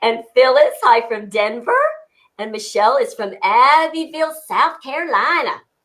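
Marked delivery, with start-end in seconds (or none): 2.4-5.6 put-on South Carolina southern accent. Reading out where a viewer checks in from: put-on South Carolina accent. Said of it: "I had to put my accent in".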